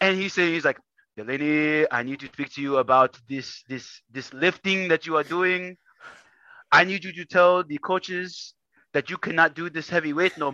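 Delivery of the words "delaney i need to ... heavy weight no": put-on strong, thick Kenyan accent. Retelling what your granddad said to you on the phone, imitating granddad's thick Kenyan accent. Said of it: "Thick Kenyan accent".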